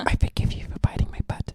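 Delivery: hushed, breathy whisper. Playing Frankie, apologizing to a wall before punching it: whispering to the wall. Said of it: "Frankie is going to just whisper into the wall".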